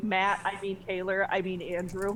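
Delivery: ordinary delivery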